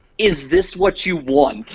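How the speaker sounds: put-on high scream, every word dragged out. Retelling a video where a kid screams at his parents: imitating someone screaming. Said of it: "He literally screams".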